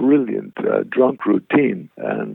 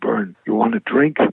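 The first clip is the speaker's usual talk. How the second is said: whispered, pitched higher; 10 semitones higher than usual. Retelling being offered a drink after the show: imitating a whisper. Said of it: "he whispers in me".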